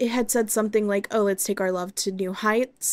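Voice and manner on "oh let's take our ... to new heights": usual speaking voice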